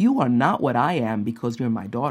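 gentle, loving, soft, sweet and low-pitched tone. Retelling what her mom told her after a meeting, imitating mom's sweet tone. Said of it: "my mom very sweetly said to me".

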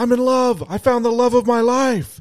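very high, play-acted, lovestruck yell. Retelling how James yelled in the parking lot: retelling James's yell. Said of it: "James immediately yells".

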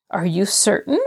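slightly doubtful, mildly uncertain tone. Rosemary questions Nancy's claim, a trifle doubtful. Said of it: "Rosemary asked a trifle doubtfully".

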